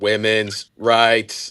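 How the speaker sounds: flat, mechanical, lifeless robotic monotone. Quoting how a man responded to a topic, in a flat robotic voice. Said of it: "he said it like this... like like a robot".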